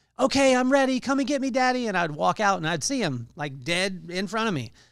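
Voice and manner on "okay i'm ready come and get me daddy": put-on high, loud little boy's yell. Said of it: "he would yell out".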